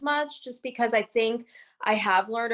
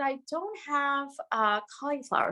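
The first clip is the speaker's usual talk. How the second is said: acted, deliberately calm, even, matter-of-fact delivery; 3 semitones higher, 4 dB quieter than usual. Retelling what was said to a friend on set before going on camera: imitating own calm delivery. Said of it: "I said it so calmly".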